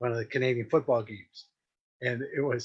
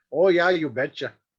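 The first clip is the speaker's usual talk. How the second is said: mock Minnesota accent, higher; 4 semitones higher, 6 dB louder than usual. Joking about not being in Minnesota, Minnesota accent impression. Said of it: "At least I'm not in Minnesota".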